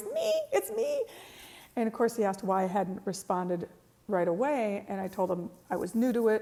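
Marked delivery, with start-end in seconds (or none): 0.1-1.0 little squeaky voice, very high. Retelling your own reply when the question was asked a third time, little squeaky voice. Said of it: "Little squeaky voice".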